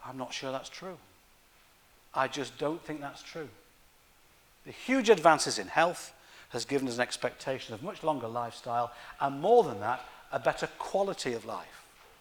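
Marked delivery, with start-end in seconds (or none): 0.0-1.0 very quiet, hushed half-whisper. Speaker admits something in the middle of a talk, half-whispering. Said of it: "But I have to whisper".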